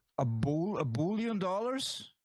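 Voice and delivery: put-on South African accent. Trying out accents in a group, doing a South African accent. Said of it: "I got South Africa now".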